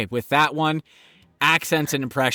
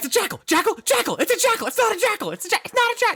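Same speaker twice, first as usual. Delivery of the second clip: mock, very high, rushed, louder-and-louder shouting. Explaining a game where someone isn't getting it, mimicking yelling louder and louder. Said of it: "you're just getting louder and louder".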